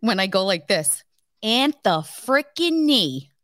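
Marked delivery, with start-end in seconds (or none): 1.4-3.2 slow, deliberate, angry tone. Showing how she sounds when mad at Anthony: imitating her own mad voice. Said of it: "Anthony knows when I'm mad".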